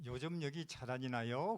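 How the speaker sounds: standard Seoul-style dialect speech. Quoting an older sister back from three months in Seoul, Seoul accent. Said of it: "서울 말을 쓰는 거예요".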